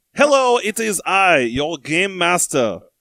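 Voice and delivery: put-on fake French accent. Opening quiz time on the show as the game master: fake french accent. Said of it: "I am a Frenchman, and I will be doing this accent the whole time".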